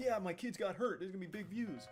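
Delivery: mock gleeful, celebratory voice. Imitating vlog parents pumping their fists: imitating parents celebrating gleefully. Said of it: "start pumping their fists".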